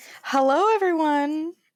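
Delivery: high, storybook witch voice. Podcast host greeting listeners at the start of an episode, witch-like voice. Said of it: "You say it like you're a witch".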